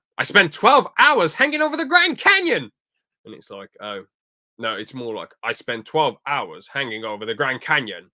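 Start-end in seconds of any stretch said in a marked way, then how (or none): 0.2-2.7 very high, loud, swooping voice. Retelling a scene, the speaker attempts a Doctor Strange voice. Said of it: "I can't do a Strange voice that well".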